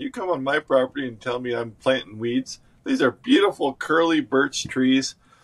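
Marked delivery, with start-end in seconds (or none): none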